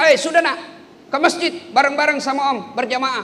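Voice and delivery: calling voice.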